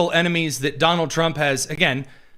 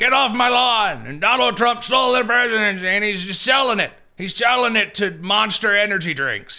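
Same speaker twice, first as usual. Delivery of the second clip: put-on high-pitched yelling old man's voice; 4 semitones higher than usual. Describing how he just starts yelling, imitating an old man yelling. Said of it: "yelling like an old man at children on his lawn".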